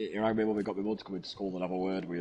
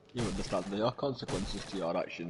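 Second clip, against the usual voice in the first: normal talking voice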